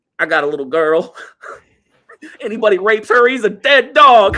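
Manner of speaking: very high, loud, fighting back tears. Retelling a movie scene, quoting a man asked if he should go to jail: imitating holding back tears. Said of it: "like keeping tears back".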